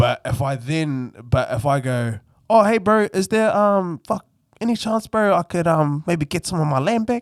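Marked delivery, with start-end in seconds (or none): 2.5-7.2 put-on, very high Māori accent. Speaker demonstrating a stereotyped voice while discussing accents, in a put-on Māori accent. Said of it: "me putting on a moldy voice".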